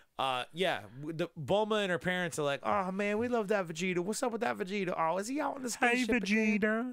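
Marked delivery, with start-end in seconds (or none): 2.7-7.0 weird, high put-on character voice. Recapping an episode, voicing Bulma's parents, in a weird put-on voice. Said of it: "that was one of your weirder voices".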